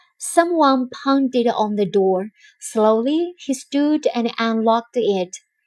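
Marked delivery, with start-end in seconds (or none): none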